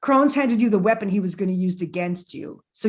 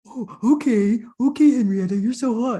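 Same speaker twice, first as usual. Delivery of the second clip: slow, fawning, drooling lovestruck swoon; 3 semitones higher than usual. Retelling how an interviewer acted with a guest: imitating a drooling infatuated man. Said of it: "he's a drooling puppy during that whole interview".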